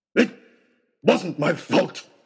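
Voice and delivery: sudden, loud, yelled-out outburst. Accused of pushing a girl, a boy shouts his defense: shouted. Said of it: "shouted Oxshot".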